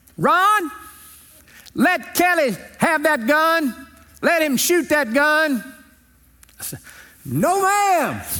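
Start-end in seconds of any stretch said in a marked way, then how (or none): 0.2-5.6 very high, drawn-out holler. Retelling how his aunt yelled at him across a field, imitating Aunt Edna yelling. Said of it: "she yells at me across the field".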